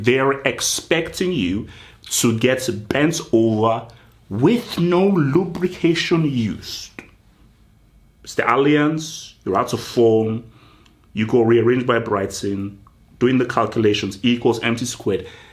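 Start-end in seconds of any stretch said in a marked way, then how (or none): 0.0-6.9 slow, deliberate, measured word-by-word pronunciation. Repeating a point slowly so people can hear: slow, deliberate delivery. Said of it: "I'm going to say it slowly so people can hear me".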